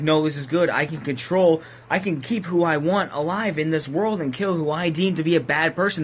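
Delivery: ordinary talk, nothing marked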